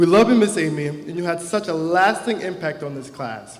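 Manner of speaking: ordinary delivery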